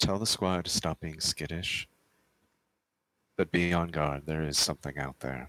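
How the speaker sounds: low stage whisper with voice behind it. A player's character gives an order to pass on, in a low half-whisper. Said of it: "I whisper really low".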